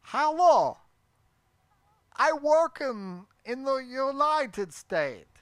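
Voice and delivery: poor Russian accent attempt. Trying a Russian accent again after a first miss, in a Borat-ish accent. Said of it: "That's not Russian".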